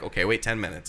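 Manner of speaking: plain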